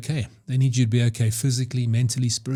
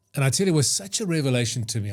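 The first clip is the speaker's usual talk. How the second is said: plain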